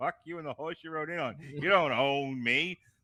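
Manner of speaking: play-acted furious, barely controlled, angry, defiant outburst. Acting out a furious reply to Superman: mock angry Supergirl voice. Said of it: "the one that's really angry about it".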